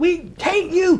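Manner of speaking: mock, very high, jeering, hostile crowd yell. Retelling how the crowd rocking the van yelled: imitating crowd yelling. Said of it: "yelling like".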